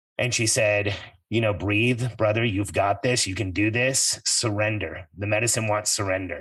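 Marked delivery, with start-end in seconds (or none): none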